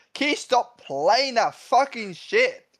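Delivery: furious shout, shrill and very high. A player speaking as his character in a game scene, yelling. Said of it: "start booing you when you yell that".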